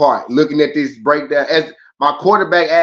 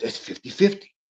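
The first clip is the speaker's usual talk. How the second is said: breathy, whispered, put-on character voice; 6 semitones higher, 9 dB quieter than usual. Calling a matchup fifty-fifty, the speaker does a Gillies voice impression. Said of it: "in my Gillies voice".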